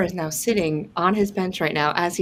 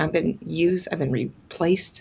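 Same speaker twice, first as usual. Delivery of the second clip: normal talking voice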